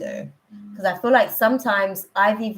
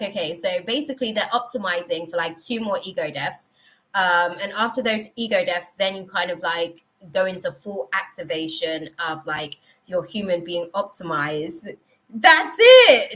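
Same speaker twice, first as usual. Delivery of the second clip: ordinary talk, nothing marked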